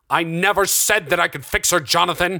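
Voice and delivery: high, loud shout at full force. Narrator reads Darren answering Jonathan after Jonathan threatens the doctor; shouted. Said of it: "Darren shouted".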